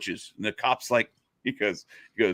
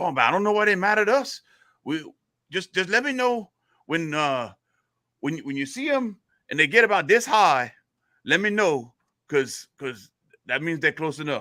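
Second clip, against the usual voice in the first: put-on Cajun Louisiana accent, higher; 6 semitones higher than usual. Telling a joke about two riders, voicing one man's reply; cajun louisiana accent. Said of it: "say it in your Louisiana accent".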